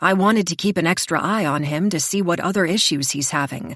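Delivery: ordinary delivery, nothing marked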